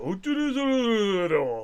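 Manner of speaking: put-on low, very slow, Japanese-accented old man voice. Describing an anime's characters, imitating an old Japanese man. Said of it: "Your impression of a Japanese old man".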